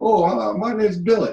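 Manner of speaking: high little sock puppet character voice. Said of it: "casting my voice into my hand as the character".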